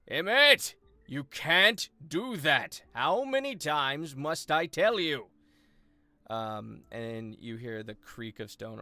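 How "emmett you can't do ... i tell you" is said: very loud, high-pitched, furious angry shout. Storyteller voicing someone shouting from the first floor at emmett, shouting angrily. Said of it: "you hear a voice shouting angrily".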